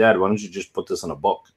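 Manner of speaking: usual speaking voice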